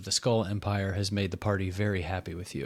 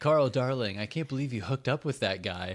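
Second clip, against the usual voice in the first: very dramatic line reading; 3 semitones higher than usual. Retelling a character's line to the group: Donut voice, very dramatic. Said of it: "Very dramatically".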